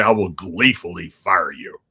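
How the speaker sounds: deep, big baritone voice. Quoting the boss's firing line in his baritone voice: Vince McMahon baritone voice. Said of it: "great to hear that baritone voice say".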